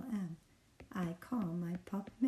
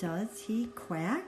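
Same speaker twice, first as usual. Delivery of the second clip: voice climbing up in pitch on quack; 3 semitones higher than usual. A reading tutor models a question sentence for a learner: rising question intonation. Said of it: "your voice goes up because it's a question mark".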